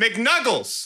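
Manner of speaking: put-on very high, tongue-tangled scream. Retelling a friend screaming an order at the drive-thru speaker: imitating someone screaming. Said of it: "he screams across me".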